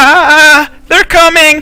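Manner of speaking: put-on very high-pitched, very loud elderly woman voice. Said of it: "It sounds like an old lady".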